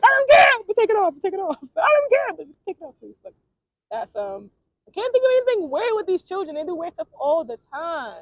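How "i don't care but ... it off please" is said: acted-out yell, much higher, louder. Recounting being handcuffed, the speaker re-enacts what they yelled back then: retelling own yelling. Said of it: "But still yelling".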